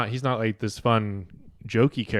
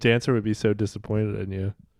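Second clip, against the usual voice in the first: usual speaking voice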